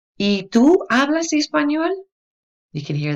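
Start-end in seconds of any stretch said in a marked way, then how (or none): 0.2-1.9 high, loud rising lilt on español. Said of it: "that little inflection on your voice".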